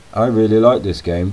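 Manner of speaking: ordinary delivery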